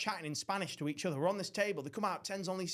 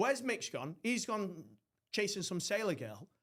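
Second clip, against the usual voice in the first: plain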